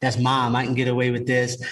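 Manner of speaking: plain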